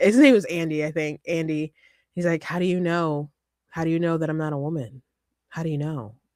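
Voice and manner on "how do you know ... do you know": put-on flat monotone, said more quietly. Retelling what a guy named Andy said in an argument, imitating Andy's monotone voice. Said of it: "the voice of a guy saying a very monotone".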